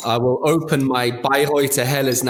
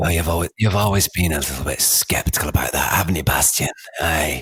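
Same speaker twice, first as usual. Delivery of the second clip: very low-pitched crime-movie villain voice; 9 semitones lower than usual. Speaking to Bastian, in a Guy Ritchie-movie supervillain voice. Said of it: "you sound like the supervillain out of a Guy Ritchie movie".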